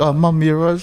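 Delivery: high, loud, mock sheepish tone.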